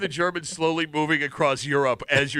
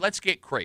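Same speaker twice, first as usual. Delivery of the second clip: normal talking voice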